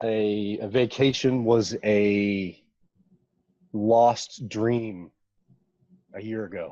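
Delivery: deeply emotional, with the first a drawn out. Speaking from the beach by their villa, the speaker is getting emotional. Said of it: "I get emotional".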